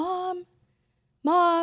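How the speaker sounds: acted very high, loud calling yell. Telling her mom how she called upstairs to her, retelling yelling 'mom'. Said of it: "like yelling to you just to say hi".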